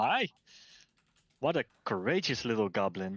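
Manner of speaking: amused tone with a little snicker. From the top of the podium, Amundra speaks, snickering. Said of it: "Amundra snicker a little bit".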